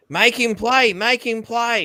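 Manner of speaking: play-acted, shrill, very high, loud, demanding yell. Retelling how the old man screamed at the coach: imitating someone screaming. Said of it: "he's screaming at the coach".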